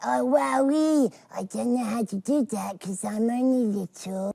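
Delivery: squeaky, very high, loud, slow puppet voice. Performing the puppet's voice after being asked for it: Tweenies character voice. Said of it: "He speaks a little bit like that".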